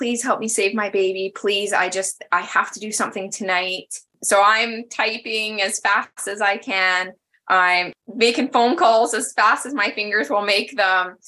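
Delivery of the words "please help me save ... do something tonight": put-on pleading, begging voice. Recalling the night a woman begged the speaker to help save her baby: imitating someone begging. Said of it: "her begging me".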